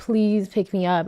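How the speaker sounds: put-on crying, pleading, begging tone. Retelling calling mom to be picked up: imitating a crying plea. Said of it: "I was crying".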